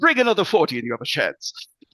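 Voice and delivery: defiant, high-pitched, loud delivery.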